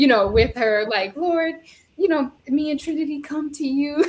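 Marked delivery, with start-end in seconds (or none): 1.2-4.0 heartfelt, earnest praying tone. Retelling how a friend grabbed her hand to pray: imitating a friend praying. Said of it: "she grabbed my hand trying to pray".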